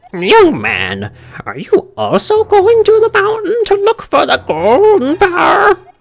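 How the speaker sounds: very high, shrill, swooping birdlike parrot voice. Voicing a game character who questions the player, in a parrot voice. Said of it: "He's just like turning into a parrot voice".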